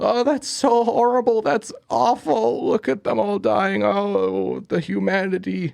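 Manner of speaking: mock high-pitched sobbing wail, drawn-out oh. Retelling a man watching the Hindenburg go down, imitating someone crying hard. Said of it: "him basically crying his eyes out".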